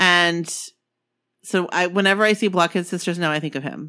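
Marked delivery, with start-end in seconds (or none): none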